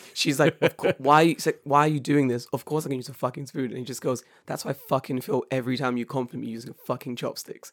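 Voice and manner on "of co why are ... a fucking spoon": put-on angry woman voice, much louder. Retelling how an annoyed girl snapped back at a guy, imitating an angry woman. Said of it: "the girl was getting so pissed off".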